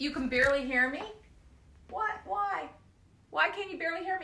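loud, high-pitched yell. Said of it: "I'm yelling".

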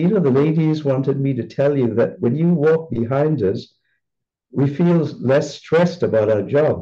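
ordinary delivery

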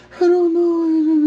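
put-on very high, little old man voice. Quoting a man upset that someone hasn't been practicing: [name]'s little old man voice. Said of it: "His little old man voice".

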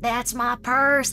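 put-on acted cartoon child voice. Showing off character impressions, the speaker does a Bobby Hill voice. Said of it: "what I really liked to do is Bobby Hill".

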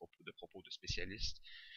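ordinary delivery, nothing marked

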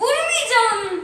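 drawn-out, high, slow teasing singsong.

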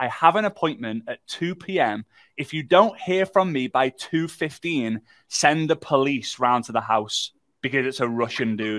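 ordinary talk

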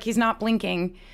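normal talking voice

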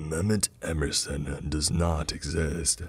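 low, deep, gravelly demonic voice. A narrator reads a demonic voice speaking from a classroom screen; low gravelly demonic voice. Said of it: "said the demonic voice on the screen".

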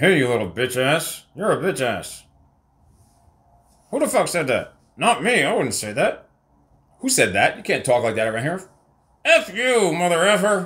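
ventriloquist dummy puppet voice. Showing how a ventriloquist makes the puppet talk, ventriloquist puppet voice. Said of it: "making the puppet talk. Like this".

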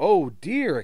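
quick exclamation, said aloud. Narrator reading Thomas's line as he realises it is late, exclaimed. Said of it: "exclaimed Thomas".

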